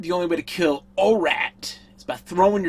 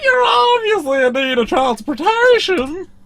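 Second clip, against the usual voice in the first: high-pitched, loud alien voice; 12 semitones higher, 6 dB louder than usual. A speaker announces doing a character's voice for the others: put-on alien voice. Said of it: "I'm going to do his voice".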